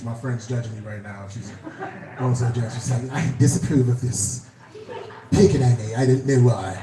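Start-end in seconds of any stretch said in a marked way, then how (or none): 3.1-6.8 put-on mixed British and Jamaican accent. Voicing a friend judging from a picture: British-Jamaican accent. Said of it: "a British slash Jamaican accent".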